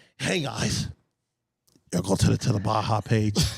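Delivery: put-on cheesy, corny into-the-microphone voice. Imitating Cam's corny sign-off line: imitating Cam's corny mic voice. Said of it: "I'm gonna do this Cam corny line".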